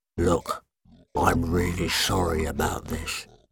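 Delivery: deep, rough, grinding monster rasp like broken glass. Narrator reads a creature speaking to Casper, deep grating voice. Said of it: "a deep voice that grated like the broken glass".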